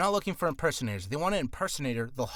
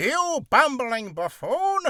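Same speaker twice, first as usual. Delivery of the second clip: loud, lofty, self-righteous, high-and-mighty king voice; 10 semitones higher, 7 dB louder than usual. Speaker imitates a self-righteous man scolding someone, mock self-righteous king voice. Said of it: "Like he thinks himself very high and mighty".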